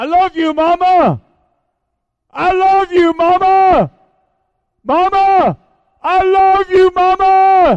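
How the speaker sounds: very loud, very high shout with drawn-out mama. Recalling a phone call to his dying mother from an airport, retelling a shout. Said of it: "And I shouted".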